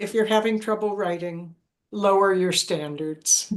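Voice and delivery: plain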